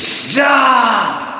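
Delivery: high, loud werewolf yell.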